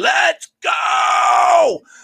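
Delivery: very high, rough, raspy all-out scream. Recalling a moment at the game: retelling a scream. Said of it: "and I'm screaming".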